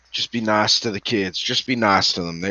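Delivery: low, hushed whisper under the breath. Laying the dog down, the speaker whispers to her: whispering. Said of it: "I'll whisper".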